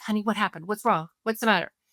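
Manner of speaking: fast, frightened, anxious, fearful worried voice. Showing how a parent comes upstairs to screaming kids, fearful, anxious voice. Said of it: "see the fear in my voice there".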